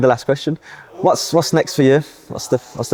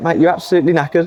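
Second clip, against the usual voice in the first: ordinary talk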